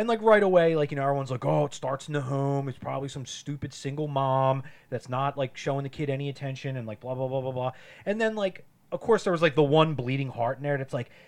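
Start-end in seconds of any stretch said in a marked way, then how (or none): none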